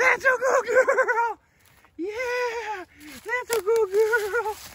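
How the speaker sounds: yeah stretched out, very high pitch. Praising a pet while handing out kibble, high-pitched voice. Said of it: "Make sure you go high pitch voice".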